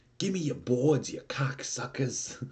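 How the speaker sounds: put-on New York accent. Retelling a man rushing at skateboarders, quoting him in a put-on New York accent. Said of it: "like in this New York accent".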